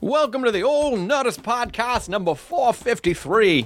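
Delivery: festive put-on voice. Opening the podcast episode, the host speaks in a holiday voice. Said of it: "This is my holiday voice".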